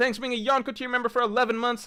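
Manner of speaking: shrill, very high, sudden shout. Thanking a Yonko-tier member for eleven months, yelling. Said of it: "Sorry for yelling".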